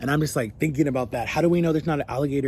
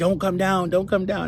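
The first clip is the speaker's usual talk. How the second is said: mock frantic, terrified, panicked pleading and screaming; 5 semitones higher than usual. Retelling a panic attack on a water ride, retelling panicked screaming. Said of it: "I'm screaming".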